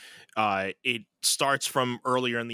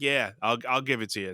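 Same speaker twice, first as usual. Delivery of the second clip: mock nonchalant, offhand tone. Retelling a scene where one character keeps putting off paying, imitating a nonchalant tone. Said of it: "he's just being so nonchalant".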